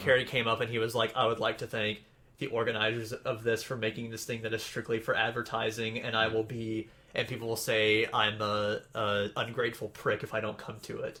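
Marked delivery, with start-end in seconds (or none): none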